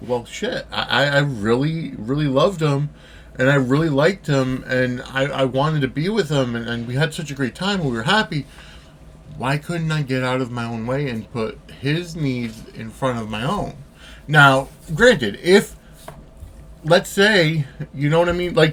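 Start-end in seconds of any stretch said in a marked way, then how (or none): none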